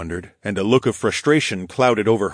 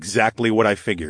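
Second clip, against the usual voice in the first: ordinary delivery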